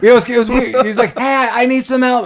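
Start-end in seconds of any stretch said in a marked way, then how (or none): 1.2-2.3 put-on, acted-out, hollered, yelled call. Retelling how a character calls to a passing truck: imitating a yell. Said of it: "I like how he yells at the truck".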